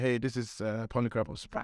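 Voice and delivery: ordinary delivery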